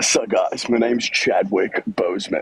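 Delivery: slow put-on American accent, best attempt. Asked by another speaker to do an American accent: put-on American accent. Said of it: "do your best American accent".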